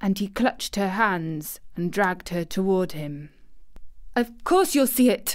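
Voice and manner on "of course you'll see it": sharp, indignant snapping. She answers him after he sobs and grabs her hands, snapping indignantly. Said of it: "snapped Mary indignantly".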